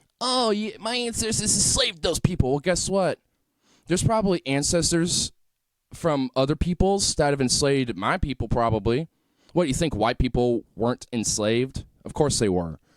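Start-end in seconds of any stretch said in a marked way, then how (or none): 0.2-2.5 whining, squeaky puberty voice, very high. Mocking a speaker in a clip: mocking whiny squeaky voice. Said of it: "whining and crying and squeaking like you're going through puberty".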